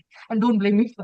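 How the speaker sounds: plain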